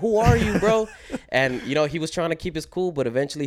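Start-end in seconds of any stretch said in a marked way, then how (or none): 0.0-0.9 loud, high-pitched shouting. Recounting yelling at a man up in the seats, retelling a yell. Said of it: "I'm just yelling".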